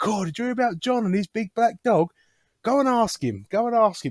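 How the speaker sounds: put-on boozy, drunk English pub-regular accent. Retelling drunk pub regulars urging a man to tell his story: imitating drunk English pub men. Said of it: "throw me a English accent in there".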